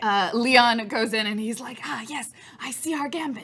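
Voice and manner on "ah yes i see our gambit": soft, light, secretive in-character half-whisper. Voicing Leon, who joins the gambit quietly, half-whispering. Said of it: "as he also whispers at it".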